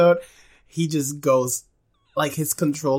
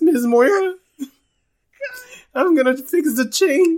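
put-on very high, loud, sneaky nerdy teenager voice; 13 semitones higher, 5 dB louder than usual. Imitating the teenager who gives the ride rules, speaking to moira, dweeby teenager impression. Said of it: "The role plays all like this".

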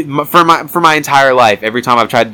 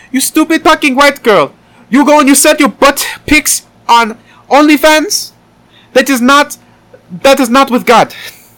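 very high, poorly done put-on Filipino accent; 4 dB louder than usual. After saying they can't do it, trying a bad filipino accent. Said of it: "It's like you're trying to do a bad Indian accent, but you're trying to do a Filipino accent".

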